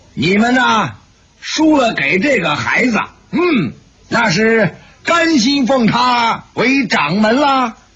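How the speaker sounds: sharp, severe voice. An old woman speaks to those who lost to the boy, sharply and sternly. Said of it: "厉声说道".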